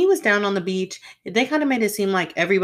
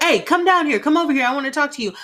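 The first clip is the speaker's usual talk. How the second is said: bossy, high, raised yell, like calling a dog; 7 semitones higher, 3 dB louder than usual. Retelling how Riley called her down like a dog: imitating Riley yelling. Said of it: "he yells at her as if like she's a dog".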